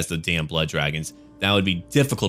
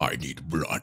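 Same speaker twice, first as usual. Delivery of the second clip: guttural put-on voice, lower, quieter; 5 semitones lower, 8 dB quieter than usual. Suggesting playing as the Blood Dragons and trying out the voice: guttural Blood Dragon voice. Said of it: "Just kind of guttural and whatnot".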